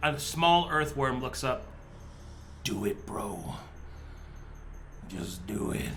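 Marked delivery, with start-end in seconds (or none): 2.6-5.9 very quiet, tiny, slow little creature whisper. A game narrator voices a small earthworm looking up, in a tiny earthworm voice. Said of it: "tiny voice underneath you".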